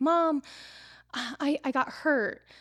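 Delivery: play-acted very slow, high, drawn-out, weepy little-kid voice. Retelling how her daughter came running in crying, imitating a crying child. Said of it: "she comes running in and she's crying".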